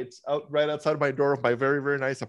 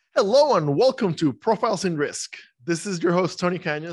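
raised radio announcer voice; 4 semitones higher, 5 dB louder than usual. Podcast host opening the show as recording starts: radio voice. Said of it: "I was switching to my radio voice".

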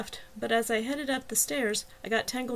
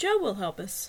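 ordinary delivery

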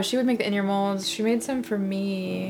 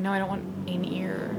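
ordinary talk, nothing marked

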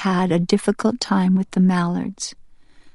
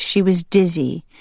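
ordinary delivery, nothing marked

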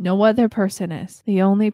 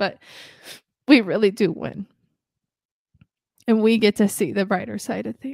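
crying through the words, voice cracking. Closing the episode before signing off until next week, voice cracking from crying. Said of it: "my voice cracking because I keep crying".

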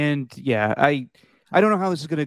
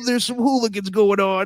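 put-on football announcer voice, slightly higher pitch; 6 semitones higher than usual. Mocking a broadcast with Jim Nantz: Tony Romo impression. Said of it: "Every time he's doing with Jim Nantz, like".

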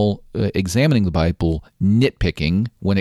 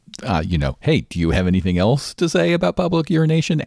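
mock-sarcastic tone, put-on, pitched higher; 6 semitones higher than usual. Retelling a congressman questioning a witness, mock-sarcastic question. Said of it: "Asking him sarcastically".

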